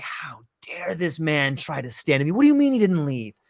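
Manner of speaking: mock-furious, enraged warlord voice. Telling a story, the speaker acts out the warlord's reaction: acting out an enraged warlord. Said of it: "And he becomes enraged".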